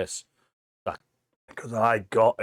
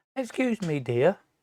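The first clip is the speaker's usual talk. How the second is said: put-on courteous, polite, higher-pitched little old lady voice; 6 semitones higher than usual. Retelling how a little old lady came over: imitating a polite old lady. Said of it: "all polite".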